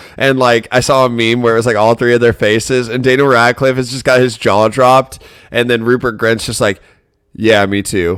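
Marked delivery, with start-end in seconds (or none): 7.3-8.2 mock dry, flat, level, no-reaction deadpan. Describing a meme of three actors, the speaker voices one reaction, mimicking Rupert Grint deadpan.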